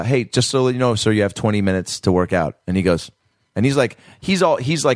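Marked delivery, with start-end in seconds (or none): none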